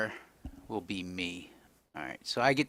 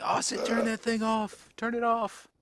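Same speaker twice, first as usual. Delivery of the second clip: very high-pitched, urgent shouted yell; 11 semitones higher than usual. Acting out a character's line in a game scene: yelling in character. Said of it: "I'm yelling".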